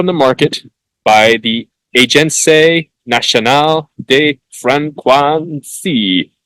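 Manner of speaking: put-on French accent. Speaker names a french agency while presenting phone data, french accent. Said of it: "You like my French accent there?".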